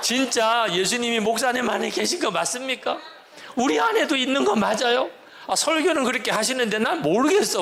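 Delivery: high-pitched shouting.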